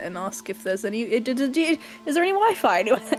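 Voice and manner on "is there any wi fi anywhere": put-on Valley Girl accent, high-pitched and drawn out. A player's character asks a question in the gift shop; Valley Girl accent. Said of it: "put on her best Valley Girl accent".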